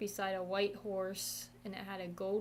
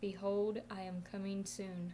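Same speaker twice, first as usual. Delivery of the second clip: quiet, soft, gentle, tender and calm; 3 dB quieter than usual. Recounting what a figure on a horse said, retelling in a soft, gentle voice. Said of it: "in a real soft, gentle voice".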